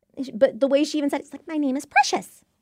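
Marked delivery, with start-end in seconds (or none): 1.5-2.3 high-pitched, put-on cartoon-character voice. Imitating how a character on Friends said her name: high-pitched put-on voice. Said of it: "in that high-pitched voice".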